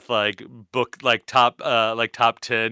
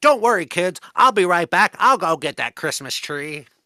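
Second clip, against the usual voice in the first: put-on cartoon mouse voice, higher pitch; 7 semitones higher, 4 dB louder than usual. Voicing the cartoon mouse reassuring his kids: Disney cartoon mouse voice. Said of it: "and he's like".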